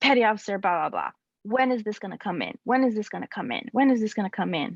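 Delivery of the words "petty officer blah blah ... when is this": ordinary delivery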